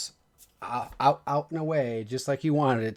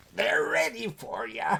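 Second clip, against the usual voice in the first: put-on high, cackling old man voice; 6 semitones higher than usual. Describing the scene to players, voicing the old man, old man cackle. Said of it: "My best old man cackle".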